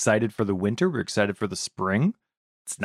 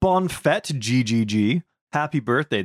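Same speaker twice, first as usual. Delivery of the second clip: slow, intentionally horrible fake French accent; 3 semitones higher, 3 dB louder than usual. A host wishing a patron happy birthday, in an intentionally horrible French accent. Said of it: "my intentionally horrible French accent".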